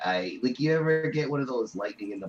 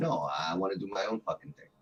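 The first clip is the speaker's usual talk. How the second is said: plain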